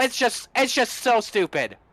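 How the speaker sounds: mad, heated, frustrated venting rant. Answering an interviewer after the restarts and yellows: angry ranting. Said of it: "I'm sorry that I'm mad at it".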